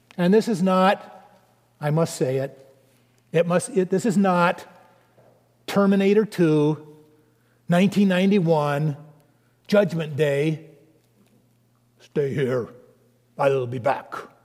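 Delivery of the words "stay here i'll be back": bad put-on Austrian accent, lower pitch. Contrasting a film with Terminator 2, quoting its famous line in a bad Austrian accent. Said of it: "my Austrian accent's not so good".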